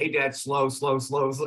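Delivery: play-acted cheeky, mocking, teasing tone. Retelling how his son teased him during a workout: imitating son teasing. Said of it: "tease me".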